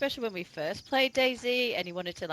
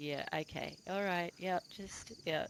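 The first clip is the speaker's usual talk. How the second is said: mock weary, resigned voice, quieter; 9 dB quieter than usual. Comparing it to a parent watching kids: imitating a resigned parent. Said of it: "the parents sitting there going".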